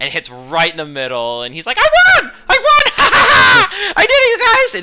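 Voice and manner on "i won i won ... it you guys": very high, very loud, gleeful, excited crowing. A lucky halfling hits the middle and wins: excited halfling voice. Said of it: "he's so excited".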